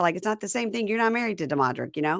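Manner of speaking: plain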